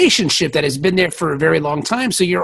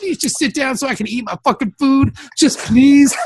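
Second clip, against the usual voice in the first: put-on pleading voice, pitched higher; 8 semitones higher than usual. Retelling a scene where O'Brien begs Keiko to settle down: imitating O'Brien pleading. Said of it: "he had, like".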